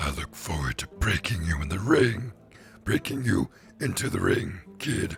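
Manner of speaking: strange, weird bear character voice. Reading a story, a grinning bear taunting a newcomer, in a weird bear voice. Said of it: "I don't know why I went with that voice".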